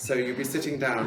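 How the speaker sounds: plain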